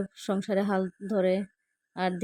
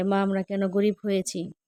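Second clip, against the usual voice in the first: ordinary talk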